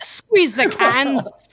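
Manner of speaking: slow, drawn-out, high, loud Scottish accent. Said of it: "In Scottish".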